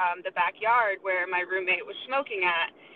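usual speaking voice

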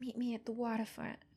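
put-on touch of a New Jersey accent. Recapping a scene, the speaker quotes Angela's line, in a Jersey accent. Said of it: "Did I do a good jersey accent?".

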